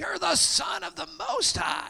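scary demon voice, very high, raspy and creaky. Retelling what the demons said to Jesus, in a scary demon voice. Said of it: "That's my best scary demon voice".

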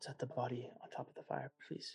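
very quiet, hushed, breathy whisper. Volna comes up to Tarak as the three approach the fire; Volna whispering. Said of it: "and just kind of whispers".

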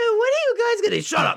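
very high, silly voice. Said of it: "The voice that he uses".

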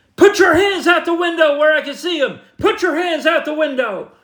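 play-acted, very high, shrill screaming. Retelling how a deputy behind the car shouted orders: imitating a deputy screaming. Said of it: "he starts screaming at me".

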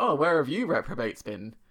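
mock sarcastic, needling, mocking jibe tone. Speaker retells a new person greeting workmates at the desk: retelling a sarky remark. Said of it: "she said it in like a sarky way".

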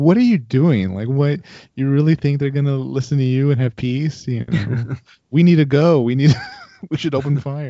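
put-on urgent, pushy, berating ranting outburst. Describing how a man in the cockpit felt about her ceasefire, retelling someone yelling. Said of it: "just yelling at her like".

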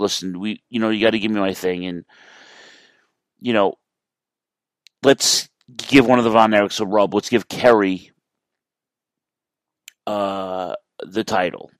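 ordinary talk, nothing marked

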